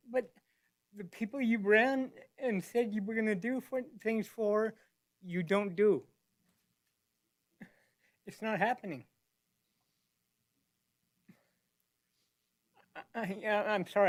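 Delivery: crying while speaking, tearful voice. Telling officials about promises not kept: crying while speaking. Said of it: "I don't mean to cry".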